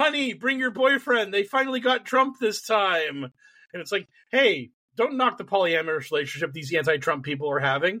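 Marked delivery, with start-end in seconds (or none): 0.0-3.2 hollered, high, raised yell. Retelling a meme of a pointing man, imitating someone yelling. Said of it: "he's yelling".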